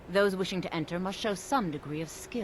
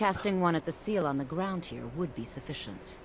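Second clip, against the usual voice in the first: normal talking voice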